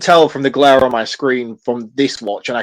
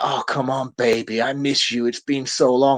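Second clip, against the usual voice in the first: creepy, pleading, sleazy, pushy voice; 6 dB quieter than usual. Retelling a film scene where a husband pushes himself on his grieving wife: imitating a sleazy man. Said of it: "the instant sleaze of this man".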